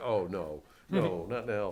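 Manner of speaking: a little upset, emotional, dismayed voice. Retelling an earlier reaction during a meeting: imitating emotional dismay. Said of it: "a little emotional about it".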